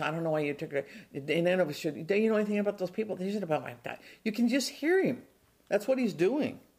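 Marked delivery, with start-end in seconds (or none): 0.0-0.9 put-on muttering under the breath. Retelling Jonah arguing with the Lord, imitating muttering under his breath. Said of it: "He's muttering under his breath".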